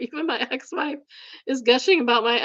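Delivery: laughing, cracking up partway through the sentence. Reading a text aloud to a co-host, laughing while reading. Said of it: "I'm sorry, I'm crying, it's so funny".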